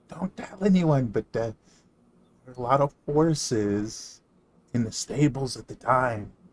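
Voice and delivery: quiet whispered voice. Voicing a character leaning over the counter to share a secret: whispering character.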